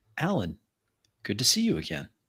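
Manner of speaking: feminine, swooping voice piped through ceiling speakers. Voicing a hidden speaker greeting alan: feminine voice over speakers. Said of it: "a feminine voice comes over hidden speakers".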